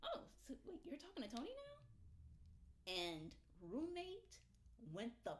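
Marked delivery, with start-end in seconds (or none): 0.0-2.9 breezy, friendly, high sing-song voice. Retelling how the question was asked the roommate: imitating own friendly tone. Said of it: "was very friendly".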